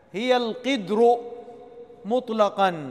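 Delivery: ordinary delivery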